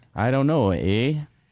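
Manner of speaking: put-on Canadian accent. Talking about accents near the border, answering in a Canadian accent. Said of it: "That was pretty convincing".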